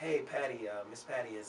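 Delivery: ordinary delivery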